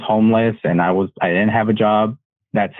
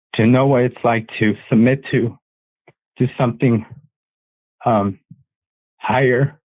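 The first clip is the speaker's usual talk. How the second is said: slightly choked up, a little emotional; 2 semitones higher than usual. Answering a question about visions and a first experience of faith, getting a little emotional. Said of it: "I'm getting a little emotional".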